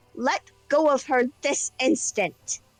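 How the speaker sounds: firm, authoritative, commanding in-charge voice. Voicing a character ordering a creature to let go: authoritative "I'm in charge here" voice. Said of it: "her best "I'm in charge here" voice".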